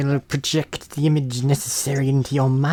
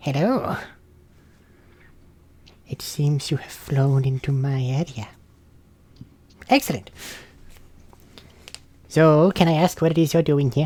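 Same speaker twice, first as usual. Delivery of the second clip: put-on decrepit, withered old lady voice. Voicing a hovering old lady who questions the flying travelers: decrepit old lady voice. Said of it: "very decrepit old lady begins to hover nearby".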